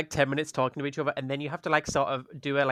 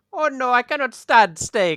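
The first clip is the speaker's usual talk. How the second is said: very high, loud, put-on, sort-of Eastern European Romanian accent; 9 semitones higher, 8 dB louder than usual. In an improvised scene, a performer turns down an offer of food: sort-of Romanian accent. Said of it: "sort of Romanian Eastern European".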